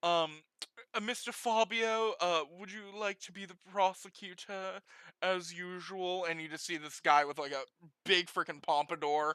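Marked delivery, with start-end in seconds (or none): 0.0-6.2 put-on British accent. Voicing a judge opening a case: British accent. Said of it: "I don't know why I'm making him British".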